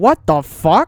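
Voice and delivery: loud cartoon-character voice. Acting out a made-up Family Guy bit as Brian walking in: Brian voice. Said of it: "Brian would walk in, and he'd go".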